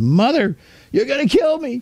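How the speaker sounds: put-on very high, screamed-out cry. Speaker retells yelling out to Mother: retelling a yell. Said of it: "And I yelled".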